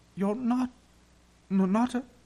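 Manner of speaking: very high, shaky, trembling voice. Susan, facing Aslan, asks him something she can't finish, in a shaky voice. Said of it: "asked Susan in a shaky voice".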